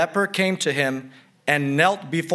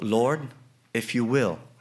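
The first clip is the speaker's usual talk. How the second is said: meek, humble, begging, pleading tone; 4 semitones lower, 3 dB quieter than usual. Imagining the tone a leper used asking the Lord, imitating humble pleading. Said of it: "I bet the tone that he used was like this".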